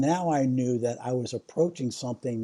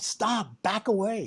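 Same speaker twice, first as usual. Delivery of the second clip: loud, high, urgent yelled shout; 9 semitones higher than usual. Retelling someone warning the speaker away from a cord, the speaker imitates a loud warning shout. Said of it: "they say very loudly".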